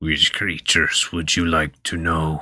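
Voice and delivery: gurgly, bubbling voice. Voicing a creature speaking from the flare: gurgly voice. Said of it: "in this kind of gurgly voice".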